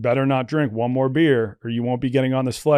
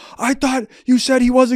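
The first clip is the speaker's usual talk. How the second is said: very high, furious, angry yelling; 12 semitones higher, 5 dB louder than usual. Retelling an airport story, the speaker imitates the check-in lady yelling at them. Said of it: "And she's like yelling at me".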